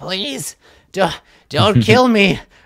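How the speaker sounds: very high pleading goblin voice. Voicing a goblin who puts his fingers together, looking up: goblin begging for mercy. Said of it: "looks up at you like".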